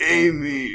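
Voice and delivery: word drawn out long and slow in one call. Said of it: "it's like".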